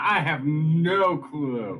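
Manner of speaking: very slow, drawn-out, called-out scream. Recounting being asked whether the group was still alive, retelling screaming out. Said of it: "I'm just gonna scream out".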